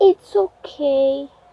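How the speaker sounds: small, sad, mournful little voice, acted out. Retelling their own past reply, in a mock-sad little voice. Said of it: "In that little sad voice".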